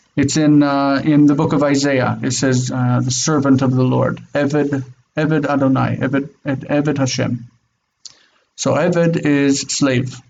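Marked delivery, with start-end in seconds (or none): none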